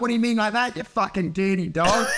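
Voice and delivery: ordinary delivery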